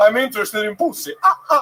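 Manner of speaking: Eastern European vampire voice. Describing approaching someone at a bar, the speaker acts it out in a vampire voice. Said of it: "I sound like a vampire".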